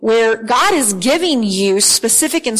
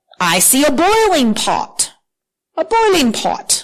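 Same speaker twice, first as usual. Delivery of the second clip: put-on British accent in a reading-aloud tone; 4 semitones higher than usual. Reading Jeremiah's reply in a Bible passage aloud, in a British accent. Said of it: "I don't know why I'm talking like a British person".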